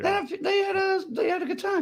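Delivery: voice shooting suddenly up very high. Saying the others had a good time at a show, voice suddenly high. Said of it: "I don't know why my voice got so high".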